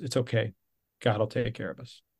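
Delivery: put-on calm voice. Man recounts his wife's reply after he quit, retelling her calm words. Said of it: "She just said very calmly".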